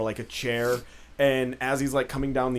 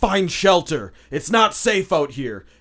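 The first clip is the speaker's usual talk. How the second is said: loud, high-pitched yell. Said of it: "And you just hear him yell".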